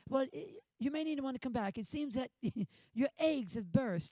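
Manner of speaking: high-pitched put-on British accent. Retelling what a man told them about the fire brigade: British accent. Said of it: "I do a great British accent".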